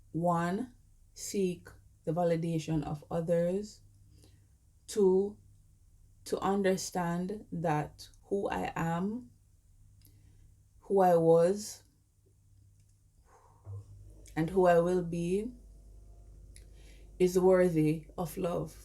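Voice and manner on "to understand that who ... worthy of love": voice choking up with emotion, near tears. Sharing what they've learned about being worthy of love, on the verge of tears. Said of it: "I'm going to cry".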